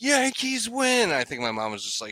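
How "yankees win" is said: very high-pitched, full-out, shrieking screaming yell. Retelling celebrating a walk-off home run at night: imitating own past scream. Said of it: "'cause I just remember screaming".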